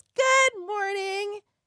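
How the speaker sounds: very high, sunny, cheerful, really happy voice. Retelling greeting him at the kitchen coffee maker, put-on happy Marcia Brady voice. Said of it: "in a like really happy kind of Marsha Brady voice".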